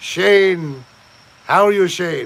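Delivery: terrible, bad, fake put-on Irish accent. Greeting Shane during a bit, in a terrible Irish accent. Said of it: "Do I sound like I'm doing a terrible accent".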